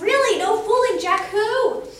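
very loud, high, astonished, shocked gasp. Reading a story aloud, a child surprised by a sentence: gasping in surprise. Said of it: "I did a gasp".

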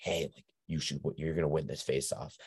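put-on whispering. Retelling what a kid told the other team: imitating someone whispering. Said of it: "whispering to the other team".

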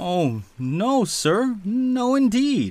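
very high, very slow, drawn-out, flustered exclaiming. Accused of impudence by an unseen speaker, he exclaims. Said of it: "exclaimed Peter".

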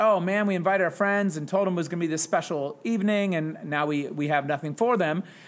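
ordinary delivery

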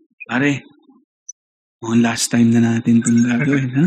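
low, hushed half-whisper. Retelling what he half-whispered to his buddy on waking, retelling a half-whisper. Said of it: "Pero pabulong, no?".

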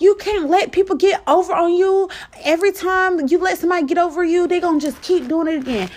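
high angry yell.

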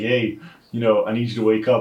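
usual speaking voice

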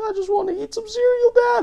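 put-on very high, loud, sobbing crying child voice. Retelling a parent's rant, acting out the kid's reply, imitating a crying kid. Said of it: "their kid is just crying, like".

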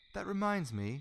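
understated, low-key, slightly high voice. A man sitting in the dark beside a blushing woman, speaking quietly. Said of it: "he said quietly".

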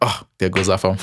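plain

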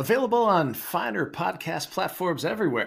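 very high, swooping sports-announcer voice. Podcast guest telling folks where to find the show, in a sportscaster voice. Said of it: "I don't know why I'm using my sportscaster voice".

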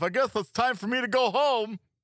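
pitched way up, silly cartoon gator voice.

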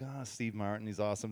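plain

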